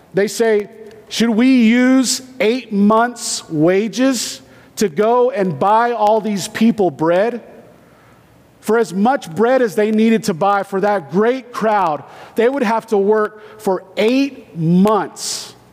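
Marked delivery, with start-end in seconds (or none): none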